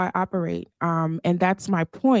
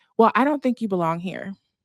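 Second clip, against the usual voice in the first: ordinary talk, nothing marked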